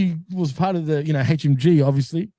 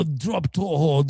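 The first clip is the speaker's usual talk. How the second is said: put-on Arabic accent, quieter; 2 semitones lower, 4 dB quieter than usual. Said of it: "But in the accent".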